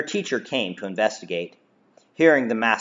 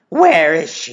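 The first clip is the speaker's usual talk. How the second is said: furious, loud, pitched-up hiss through clenched teeth; 6 semitones higher, 6 dB louder than usual. A woman demanding answers from a man, hissed through gritted teeth. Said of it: "Zenafia hissed at Darian through gritted teeth".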